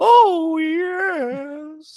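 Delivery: very high, loud creepy-grandpa voice, drawn-out "yes". Redoing a past impression of Paul Bearer: Paul Bearer impression. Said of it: "it does sound like the creepy old grandpa from Family Guy".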